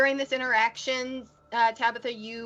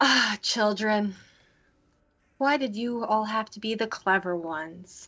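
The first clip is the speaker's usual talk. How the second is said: eerie, weird, creepy, unsettling voice. Voicing a figure who gets up after being knocked down: weird creepy voice. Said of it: "weird, creepy thing and goes".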